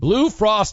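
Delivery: voice breaking mid-word, cracking up high. Reading a sponsor plug for an it company, voice cracking. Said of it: "you hear my voice crack there?".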